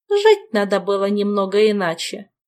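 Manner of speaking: sarcastic, caustic, cutting and biting tone. Camilla, still on the floor, answers the bodiless spirit with a caustic remark. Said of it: "язвительно заметила Камилла".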